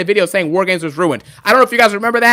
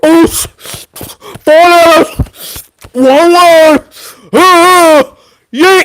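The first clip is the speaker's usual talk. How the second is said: put-on, very slow, gasping, winded, raised delivery; 8 semitones higher, 7 dB louder than usual. Mocking Jey Uso on the mic: imitating Jey Uso out of breath. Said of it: "he's out of breath after all that yeeting".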